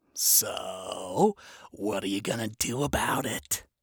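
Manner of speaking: low, sly, sinister voice. Narrating a story, voicing the specter's question to Lute: sly, sinister tone. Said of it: "asked in a sly, sinister tone".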